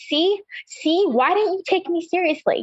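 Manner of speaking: mock high, slow yell. Retelling yelling at the doctor who didn't take her seriously: retelling own yell at doctor. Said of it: "I just remember yelling at the doctor".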